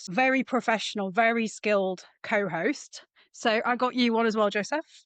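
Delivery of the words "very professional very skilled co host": ordinary talk, nothing marked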